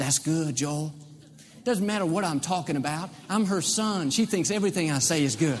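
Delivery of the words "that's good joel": put-on whisper. Imitating his mother egging him on from the front row: imitating his mother whispering. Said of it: "she's constantly whispering".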